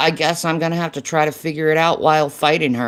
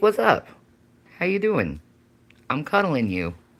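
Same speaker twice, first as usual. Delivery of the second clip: put-on relaxed cat voice, quieter; 4 dB quieter than usual. Showing off the cat Gavin and speaking for him, Gavin's chill cat voice. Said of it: "He's just chilling like a villain".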